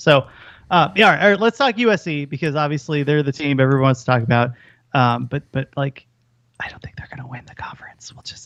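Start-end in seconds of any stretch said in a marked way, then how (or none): 6.6-8.5 whispering, much quieter and lower. Speaker talks football teams just before the USC segment: whispering. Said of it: "I'm just whispering".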